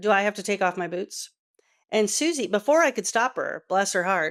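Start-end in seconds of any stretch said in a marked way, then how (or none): 0.0-1.3 gruff, guarded, wary grumbling voice. Retelling how a suspicious visitor at an open house asked: imitating a gruff question. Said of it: "sort of gruffly says".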